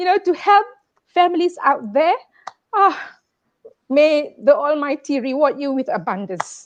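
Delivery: heartfelt, moved, emotional voice. Thanking Warren for collecting donations to help families: getting emotional. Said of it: "Now I'm getting emotional".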